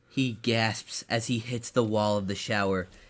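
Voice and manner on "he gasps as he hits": plain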